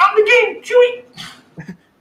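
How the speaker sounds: squeaky, very high, slow, drawn-out put-on voice. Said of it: "he's talking like [name] or [name]".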